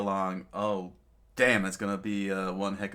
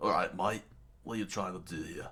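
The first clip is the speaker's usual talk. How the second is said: broad put-on Australian accent; 7 dB quieter than usual. Showing how a character could have been voiced: Australian accent as Crocodile. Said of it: "Australian accent with Crocodile".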